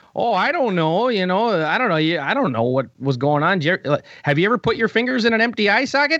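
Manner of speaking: put-on very thick Minnesotan accent. Retell his answer to the sound guy during the interview, in Eddie Sharkey's very Minnesotan accent. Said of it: "in his very Minnesotan accent is like".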